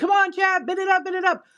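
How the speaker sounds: acted high-pitched yelling in a pumped-up hype-announcer style. Describing hype shows on the app, the speaker imitates hosts, imitating hype host yelling. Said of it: "where they're yelling".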